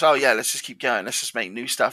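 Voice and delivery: ordinary talk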